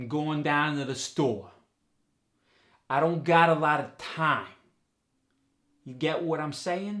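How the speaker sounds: loud, level New York accent, endings dropping off. Teaching the New York dialect, giving an example sentence: New York accent, pitch dropping off. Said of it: "there's a pitch drop off often at the end of words".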